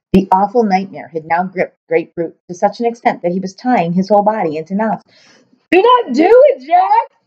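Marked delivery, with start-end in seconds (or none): 5.7-7.0 very high, very slow, drawn-out shriek. Gripped by a nightmare and twisting into knots, he screeches at Jack. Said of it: "he screeched".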